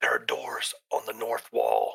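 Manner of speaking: soft whisper under the breath. Playing a character in a tabletop game, whispering back to the party. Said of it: "I'll whisper back".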